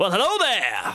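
pleasant, high, salesy salesman voice. Voicing a smiling suited salesman greeting the players: smiling salesman greeting. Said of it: "And he looks down at you smiling".

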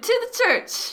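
screaming really loud. Declaring an in-character action, arm around a shoulder: screaming really loud. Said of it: "Really, really loud, like, scream at the dudes".

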